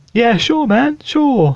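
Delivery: sweet, friendly, very high, very slow nice-guy voice. Acting out a pierced worker at McDonald's answering a customer: acting a nice-sounding guy. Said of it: "He's probably a really, really nice sounding guy".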